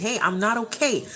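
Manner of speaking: ordinary talk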